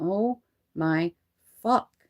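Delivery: put-on muttering under breath. Retelling own words said beside someone snoring: imitating muttering under breath. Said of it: "under my breath".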